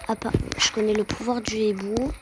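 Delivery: ordinary talk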